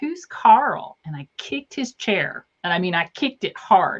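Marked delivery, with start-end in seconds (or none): 0.0-1.0 put-on very high, loud, bratty, snotty little kid voice. Retelling a chatty kid at the end of a movie, imitating a snotty little voice. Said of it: "he says in this snotty little voice".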